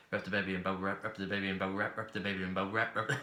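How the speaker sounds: rapid-fire, quickly repeated speech. Taking up the challenge to say a tongue twister ten times, said fast. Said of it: "Say that ten times fast".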